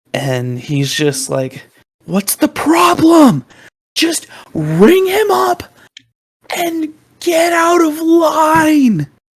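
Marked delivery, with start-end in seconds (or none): 2.0-9.0 absolutely shouting, very high, loud and swooping. Retelling how a customer in line shouted at the man ahead: imitating someone shouting. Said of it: "starts absolutely shouting at the guy".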